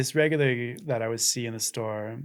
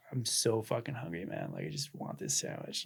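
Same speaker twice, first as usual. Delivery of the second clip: mock beaten-down voice, on the edge of crying; 9 dB quieter than usual. Retelling what a hungry man caught with a sandwich said: imitating a defeated, tearful voice. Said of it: "he's defeated".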